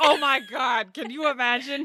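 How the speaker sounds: mock staggering drunk woman, high, loud drawl. Imagining a character staggering around the room: imitating a drunk woman. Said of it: "drunkenly staggering around the room as she's like".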